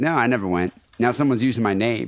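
ordinary talk, nothing marked

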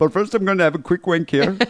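put-on, somewhat Indian accent. Imagining what a reckless driver was thinking: put-on indian accent. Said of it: "That's kind of an Indian accent".

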